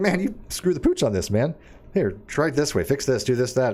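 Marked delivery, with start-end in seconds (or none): none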